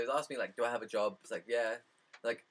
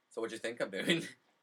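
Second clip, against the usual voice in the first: ordinary talk, nothing marked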